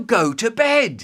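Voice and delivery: loud, high-pitched shouting. Retelling the brother's words on the sofa: imitating a brother shouting. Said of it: "No need to shout".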